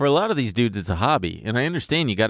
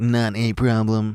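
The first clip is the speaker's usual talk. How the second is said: put-on robotic, machine-like droning voice. Imitating how a drone firing a missile would talk: Gleep Glorp style drone voice. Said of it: "the drone voice would definitely be like".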